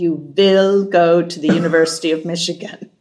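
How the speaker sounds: put-on German accent. Recalling a father's words about college, in the father's German accent. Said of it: "in his best German accent".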